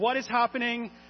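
terrified, bewildered, high-pitched panicked shriek. Speaker retells a crash scene in a story, imitating kids screaming. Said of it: "the kids are screaming".

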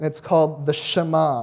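ordinary delivery, nothing marked

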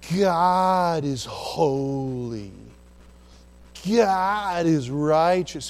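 words stretched long and slow, holy stretched. Speaker showing listeners how stretching words undercuts the truth; stretched-out words. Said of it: "I'm going to stretch my words out".

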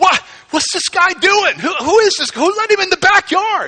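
high, loud, panicked shout. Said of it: "freaking out. It's like".

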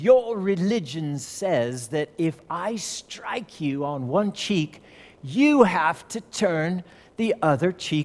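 put-on British accent. Retelling what a man in a heated discussion said: imitating a British accent. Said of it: "and he had a British accent".

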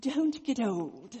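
put-on British accent. Quoting a ninety-seven-year-old friend's warning: imitating a British accent. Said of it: "in her dear British accent".

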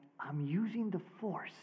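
hushed, barely audible half-whisper. Retelling a son's answer during a sermon: imitating a child half-whispering. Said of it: "To which he whispered back".

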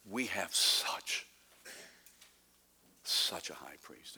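slow, marveling, awed emphasis on such. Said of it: "You can hear him saying".

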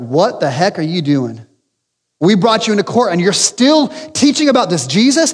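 furious, demanding, enraged outburst with pitch rising. Retelling the authorities questioning the apostles in court: imitating enraged authorities. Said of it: "the authorities are enraged".

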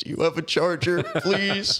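high, tearful, sobbing, begging voice. Retelling asking people for a charger after the phone died, retelling a sobbing plea. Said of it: "I went around like sobbing".

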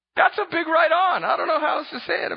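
breaking voice. Speaker keeps talking to listeners, voice cracking. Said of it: "my voice is cracking".

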